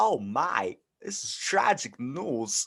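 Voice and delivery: every word stretched out, very slow and deliberate. Doing an impression the other speaker asked to hear: Christopher Walken impression. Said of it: "I can rip out a Christopher Walken".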